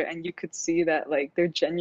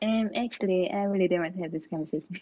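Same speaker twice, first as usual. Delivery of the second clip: put-on cartoon kid voice, much quieter; 4 dB quieter than usual. Friends on a podcast ask for the voice, trying a bad Eric Cartman impression. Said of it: "I did it so bad".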